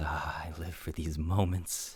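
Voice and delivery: eerie, mysterious-sounding voice. Voicing a voice heard from inside a bag: voice from the bag. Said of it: "the voice again says".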